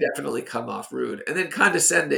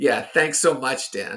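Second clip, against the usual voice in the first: condescending sarcastic tone. Demonstrating sarcasm in a back-and-forth with another speaker, sarcastic thanks. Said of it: "Dan and I trying to perform what sarcasm is".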